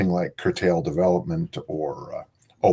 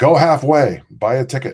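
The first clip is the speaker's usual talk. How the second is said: loud, booming, heavenly voice from above; 7 semitones higher, 7 dB louder than usual. Telling a joke, delivering the answer that comes from heaven: voice booming from heaven. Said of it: "a voice booms from heaven".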